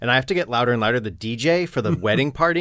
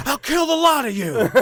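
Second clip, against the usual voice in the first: very high, furious, enraged screech; 14 semitones higher than usual. Retelling smashing a fist on a pedestal as the music cuts out: retelling an angry scream. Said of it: "and I'm screaming".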